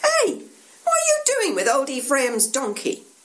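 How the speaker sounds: high-pitched voice calling out. Narrator reads a local on the street corner calling to two men; calling out. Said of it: "One of them calls out".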